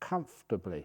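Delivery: leaning hard on the word "comfortably". Explaining how to sit in a quiet place: stress on COMFORTABLY. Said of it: "I stress that word comfortably".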